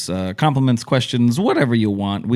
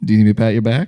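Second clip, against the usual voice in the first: mild, understated, gentle low-key tone. Retelling what the other speaker asked during a choking fit: imitating a quiet question. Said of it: "you very quietly said".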